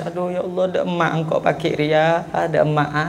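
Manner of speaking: soft, tearful murmur through tears.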